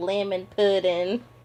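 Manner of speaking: put-on belted high cartoon child voice. Explaining a kid from Hey Arnold who always says this: Hey Arnold kid impression. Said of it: "that kid that's always like".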